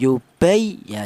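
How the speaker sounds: stress on ya in yubay. Lesson on reading the doubled letter: pressed, slightly higher ya in yubay. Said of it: "ditekan seperti itu".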